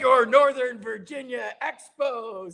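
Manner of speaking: very high, drawn-out screaming. Retelling a teammate ranting from the back of the team bus: imitating Mike Lansing screaming. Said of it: "he's screaming it on the bus".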